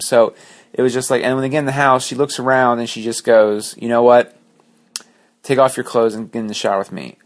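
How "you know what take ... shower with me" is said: ordinary delivery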